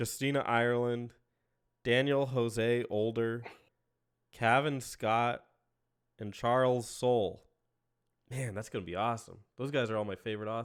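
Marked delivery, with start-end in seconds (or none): 8.3-10.7 heavy sarcasm with insincere, false enthusiasm. Praising the newly hired authors to another speaker: sarcastic. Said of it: "Are you being sarcastic?".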